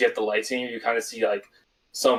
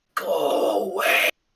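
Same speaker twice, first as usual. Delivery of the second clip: high, rasping, snarling creature voice; 9 semitones higher than usual. The speaker voices something that moved behind the throne: high-pitched raspy snarl. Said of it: "It's like a very raspy voice you hear".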